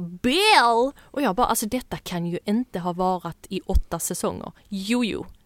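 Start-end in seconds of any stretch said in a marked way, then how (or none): 0.0-0.9 loud, drawn-out, put-on Southern US accent. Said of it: "[name] med sin lilla southern accent och bara".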